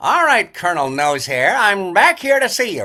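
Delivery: loud cartoon inspector voice, pitched high. Recalling a voice actor's bit as he reports back to the Colonel, in a Gadget voice. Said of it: "he'd do his Gadget bit".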